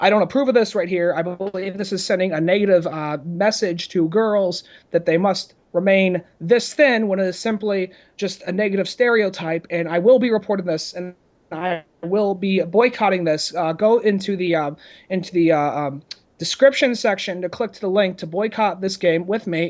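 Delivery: ordinary talk, nothing marked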